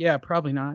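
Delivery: put-on muttered aside. Retelling an aside during the fight announcing: Sean Porter muttering under his breath. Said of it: "he said it under his breath".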